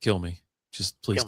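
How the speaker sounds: faint, very low, soft, hushed half-whisper. Retelling a film scene, quoting a character begging at night: half-whispering.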